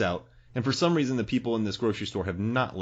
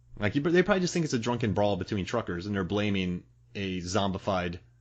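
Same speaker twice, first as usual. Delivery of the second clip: usual speaking voice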